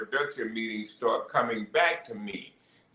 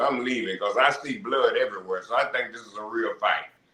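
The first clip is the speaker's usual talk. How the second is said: ordinary delivery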